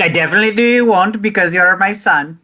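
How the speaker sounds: put-on Indian mom accent. Speaking as a mother praising her son, in an Indian mom accent. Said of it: "Taylor does a great Indian mom accent".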